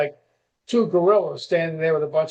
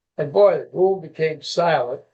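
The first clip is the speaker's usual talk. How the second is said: ordinary talk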